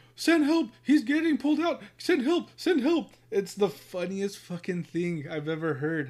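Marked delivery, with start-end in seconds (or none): 0.2-3.2 very high, shrill, loud, pleading screaming woman's voice. Retelling a wife screaming while her husband is on with dispatch, imitating a wife screaming. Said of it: "his wife is screaming at the".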